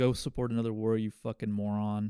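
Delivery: ordinary delivery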